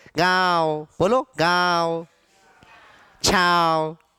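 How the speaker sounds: speaking through the nose. A teacher demonstrates nasal pronunciation of words for a class, strongly nasalized. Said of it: "नाक का उच्चारण".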